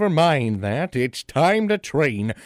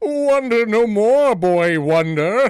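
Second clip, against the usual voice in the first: grandiose, pompous comic superhero voice, loud, slow, high; 8 semitones higher, 5 dB louder than usual. Answering a boy's wondering aloud, the hero announces himself: pompous Captain Awesome superhero. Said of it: "Yes, it is I, defender of justice, herald of peace, man of... something. Any hoozle, it doesn't matter. / He receives some gadgets from the [name] (Drew Zoromski) and spends the rest of the episode tr".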